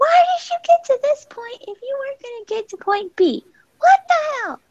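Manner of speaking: play-acted, very high, upset shrieking outburst. Retelling what was said to a partner: imitating own past screaming. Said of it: "I was screaming".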